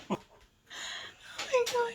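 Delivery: laughing while talking. Answering a request to stop laughing in a hospital bed: laughing while talking. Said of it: "Stop laughing".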